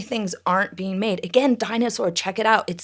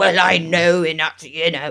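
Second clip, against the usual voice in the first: mock-pompous blustering, much lower; 4 semitones lower, 4 dB louder than usual. Wondering if Eddington will be a bloviator, in mock-bloviating bluster. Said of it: "a bit of a bloviating".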